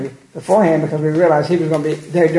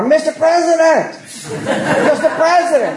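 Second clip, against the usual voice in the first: mock, very high, slow, drawn-out screamed call; 12 semitones higher than usual. Retelling hollering after the president as he steps out the exit door: retelling a scream. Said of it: "I'm screaming".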